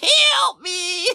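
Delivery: horrible, awful, very high shriek. Describing a movie scene where a trapped fly screams, imitating a horrible screaming voice. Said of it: "screaming in this horrible voice".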